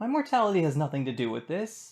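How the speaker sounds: clearly put-on surprise. Interrupting the lecture to answer an unheard objection, feigned surprise. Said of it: "[feigned surprise]".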